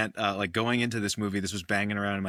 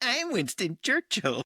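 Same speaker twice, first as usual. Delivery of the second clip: very high-pitched cartoonish voice; 14 semitones higher than usual. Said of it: "expecting Gary Oldman to break out in".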